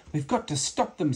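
desperate voice, high-pitched. As the others escape in the van, Plog speaks, desperate. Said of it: "said Plog, desperately".

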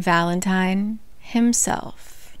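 dramatic, slow, hushed whisper.

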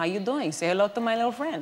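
put-on weak, slightly Cuban accent. Retelling joking on set with a costar: bad Al Pacino Scarface impression. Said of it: "we attempted the accent, but it turned out a little Cuban".

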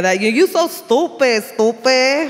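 put-on thick Puerto Rican New York accent, slow. Speaker recalls the girls from back home, in a thick Rosie Perez Puerto Rican accent. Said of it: "that really thick Rosie Perez Puerto Rican accent".

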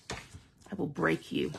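fake sinister villain voice, slow and creaky. Breaking paper fibers with a bone folder, joking: mock evil voice. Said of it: "why did that sound like so, like, evil".

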